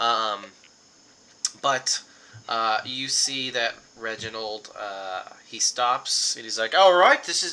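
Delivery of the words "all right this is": put-on slipped into New Zealand accent, higher and louder. Voicing a character who stops the group in the woods: slipped into New Zealand accent. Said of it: "I went to the wrong accent".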